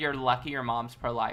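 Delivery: ordinary delivery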